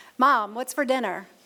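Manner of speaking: normal talking voice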